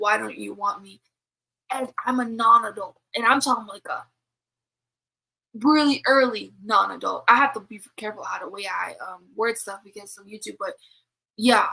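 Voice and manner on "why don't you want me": put-on sobbing voice. Retelling what an insane woman cried out: imitating someone sobbing. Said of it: "crying, sobbing, like".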